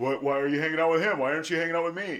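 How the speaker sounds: acted needy, jealous tone. Retelling jealous questions about who she hangs out with: imitating jealous questioning. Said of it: "But in early recovery, I did".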